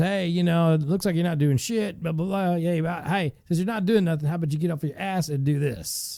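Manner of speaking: very blunt, rude, curt tone. Acting out how a rude supervisor orders workers around: imitating a blunt supervisor. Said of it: "I'm saying it very bluntly".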